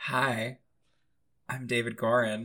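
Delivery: speaking quietly in a hushed, tired voice. Introducing yourself on a podcast from a hotel room: speaking quietly, tired. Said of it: "I'm being a little quiet 'cause I'm tired".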